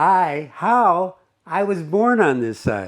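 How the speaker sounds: put-on slow, high, drawn-out shouted yell. Reading out the reply shouted back across the traffic: imitating a man yelling back. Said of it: "He yells back".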